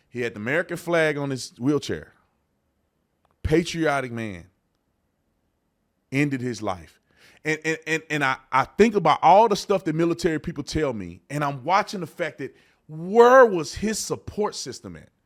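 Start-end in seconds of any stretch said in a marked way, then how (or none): 0.1-7.0 emotional, choked voice. Recalling finding a veteran who shot himself, getting emotional. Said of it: "I don't wanna get emotional".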